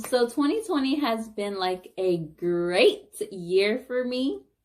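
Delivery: heavy sarcasm, mock enthusiasm, loud and swooping. Summing up the past year to viewers: sarcastic. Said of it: "Hope you hear the sarcasm in my voice".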